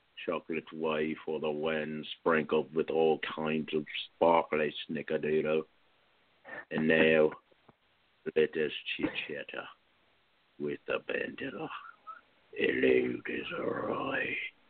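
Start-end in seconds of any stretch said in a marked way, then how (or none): 8.4-14.4 slow, unsettling, creepy horror-clown voice. Host greets a guest in a voice that reminds the guest of It. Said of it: "when you say it like that".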